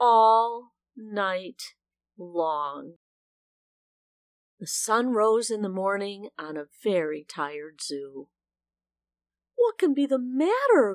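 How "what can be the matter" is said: quick, rattled-off exclaiming cry. The zookeeper, finding a very tired zoo in the morning, cries out. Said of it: "cried the zookeeper".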